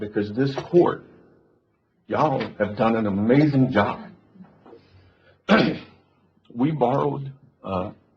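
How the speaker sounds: tearful, choked-up voice. Praising the court's work during a budget talk, crying. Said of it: "I don't know why I'm crying".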